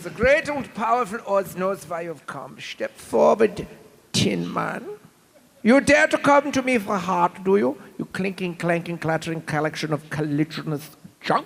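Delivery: put-on grand stage wizard voice with German accent. In a comic stage play, Oz addresses the Tin Man: German-accented Oz voice. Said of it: "[name] [name] from COD Zombies. / Guten Tag, ... have you the effrontery to ask for und brain? / Twisted Toonz brought voice actors [name] Cummings, [name] North, and [name] Harnell to the stage at Fa".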